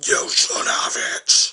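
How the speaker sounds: booming, very loud, dark demonic voice. Retelling a man in a cafe who suddenly began talking: dark demonic voice. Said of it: "began to talk like a demon".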